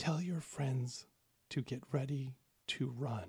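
very quiet, hushed whisper. Narrating a character whispering a warning into the listener's ear, whispering very quietly. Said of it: "she whispers ever so quietly in your ear".

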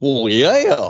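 loud voice like a cartoon dog. In a comedy skit, answering a stranger offering candy, in a Goofy voice. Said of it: "Why the fuck you sound like Goofy?".

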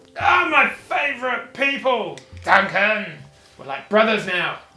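boisterous dwarf voice. A dwarf bursts out of the door to greet his favourite people: loud boisterous dwarf voice. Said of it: "You hear the loud boisterous voice of the dwarf".

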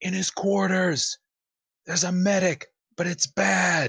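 shouted, high-pitched call. Playing a character in a scene, answering where the kid is: yelling. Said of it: "she yells".

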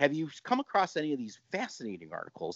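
quick, swooping, sarcastic, tongue-in-cheek tone. Asking the other speaker a question, sarcastically. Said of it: "I say that sarcastically".

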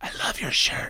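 quiet, hushed, secretive, confiding whisper. Retelling what strangers at Costco say about the shirt, imitating a whisper. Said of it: "Why are you whispering?".

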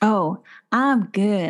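put-on Tennessee-style Southern accent. Asked how he is doing, the speaker answers in a southern accent. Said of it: "I've got a southern accent".

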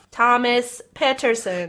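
robotic, machine-like robot voice. Reading out the winning name drawn from a hat, in a robot voice. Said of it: "I said that like a robot".

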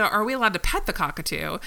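ordinary delivery

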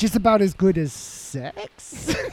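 very slow, unsure, hesitant, lacking authority. Group banter, showing how the claim must be said: hesitant, without authority. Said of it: "you can't say it with authority. You have to be like".

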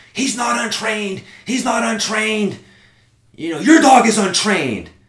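mock furious, high-pitched outburst, losing it completely. Retelling a dog owner's reply to the speaker, acting out her furious outburst. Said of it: "she just fucking lost it".

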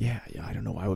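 low, soft mumble, as if to himself.

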